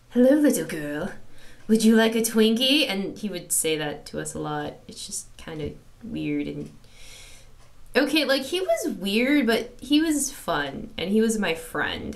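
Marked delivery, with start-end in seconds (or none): 0.2-2.9 loud, seriously unsettling, really creepy voice. Recalling a friend's running joke from high school, retelling a creepy voice. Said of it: "in a really, really creepy voice that I'm gonna try right now".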